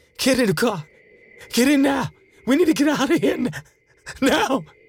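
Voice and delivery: very high, breathless, out-of-breath yelling. [name] runs around the car and calls to Betty, breathless shouting. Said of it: "breathlessly shouted to Betty".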